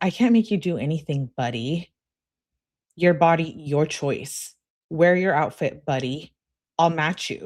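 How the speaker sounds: ordinary delivery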